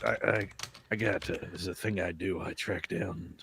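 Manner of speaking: put-on tough tracker voice. Imagining how a helpful stranger who tracked a package sounds. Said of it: "my head voice from now is".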